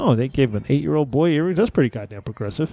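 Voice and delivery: ordinary talk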